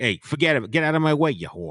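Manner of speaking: put-on rude New York accent. Urged to do the audiobook imitation, the speaker plays a New York asshole. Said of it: "like a New York asshole".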